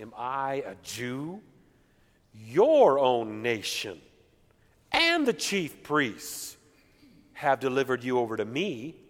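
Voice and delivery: mocking, scornful, sarcastic tone. Reading Pilate's reply to Jesus from scripture aloud: sarcastic. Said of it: "you can imagine with sarcasm".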